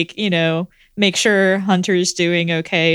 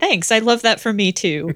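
snide, snarky, sarcastic tone; 3 semitones higher than usual. Narrating Adrian's reply to the doctor before he walks away, snarky. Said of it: "in a kind of snarky voice".

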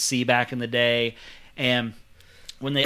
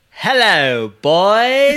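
put-on very loud swooping British accent, "boys" drawn out; 8 semitones higher, 11 dB louder than usual. Asked by another speaker for his rendition, greeting in a british accent. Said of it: "can we hear your rendition of it".

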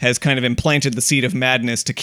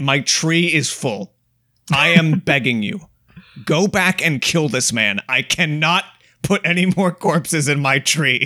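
exasperated, much slower; 3 semitones higher than usual. Telling a made-up story, speaking as Death; exasperated Death. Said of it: "an exasperated Death being like".

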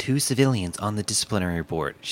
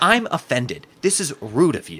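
offended, pitched-up complaining tone; 7 semitones higher, 4 dB louder than usual. Retelling a debate reply to David Kloiber: imitating Linda Gorton offended. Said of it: "she's like".

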